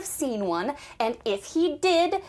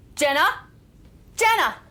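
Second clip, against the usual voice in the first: loud hollering yell; 3 semitones higher, 6 dB louder than usual. Calling her daughter to come listen to a phone message: yelling. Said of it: "you're yelling at me".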